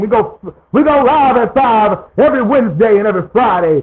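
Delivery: proclaiming delivery like a famous civil rights orator. Announcing the show's live schedule, the host repeats it as a Martin Luther King impression. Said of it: "I'm going to say it like Martin Luther King".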